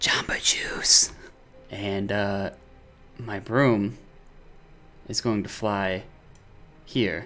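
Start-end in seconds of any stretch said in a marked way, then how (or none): 0.0-1.1 barely-there, very low, breathy whisper. Speaking the command word to make the broom fly, very low whisper. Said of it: "I'm just in a very low whisper".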